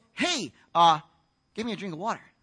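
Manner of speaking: ordinary delivery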